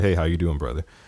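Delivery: ordinary delivery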